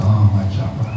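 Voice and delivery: very quiet, low, proud, relishing murmur. Recounting a Maharaj's reply when asked about his beads, imitating a millionaire-like relish. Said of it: "He said it like, a millionaire talks of his wealth".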